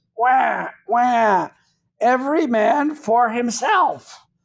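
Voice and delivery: very slow, high, drawn-out parrot voice. Describing the parrot on a pirate's shoulder in old pirate movies, parrot voice. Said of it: "that little parrot says".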